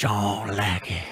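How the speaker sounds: gruff put-on voice.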